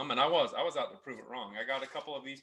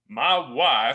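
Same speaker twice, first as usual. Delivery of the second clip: put-on Texas accent, louder; 12 dB louder than usual. Quoting a coworker about his wife: imitating a Texas accent. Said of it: "in the coolest accent from Texas".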